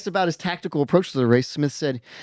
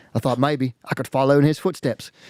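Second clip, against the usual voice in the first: put-on New Zealand accent; 2 semitones lower than usual. Reading a news report aloud when asked: put-on New Zealand accent. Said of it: "you're pretty spot on".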